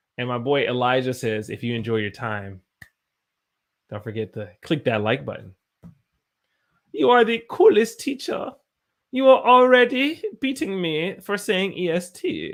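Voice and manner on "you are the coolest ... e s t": loud, very high, really bad German accent. Speaking to viewers, in a really bad german accent. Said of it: "I'm speaking with a random German accent".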